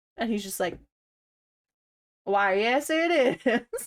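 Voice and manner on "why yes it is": put-on Tennessee drawl, loud and very slow. Acting out a man confirming to callers that he is Ashley Williams, fake Tennessee accent. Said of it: "Tennessee accent".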